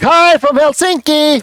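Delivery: very high-pitched, hyped-up, energetic party voice. Leading an audience greeting, showing the voice wanted: party voice. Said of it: "I want to hear like party voices".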